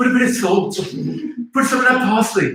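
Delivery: high-pitched, angry, barking delivery, pitched way up. Asked to try one, attempting a Gordon Ramsay impression. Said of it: "I wonder if I can do one".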